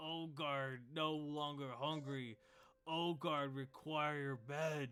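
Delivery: very slow half-ogre voice, each word dragged out. In an actual-play game, the narrator voices the half-ogre after an eating contest: Ogard voice. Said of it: "The barkeep goes over here and hands like 3 platters worth of food to the half ogre. / which to an ogre is quite a large sum. / "Ugh, [name] sad".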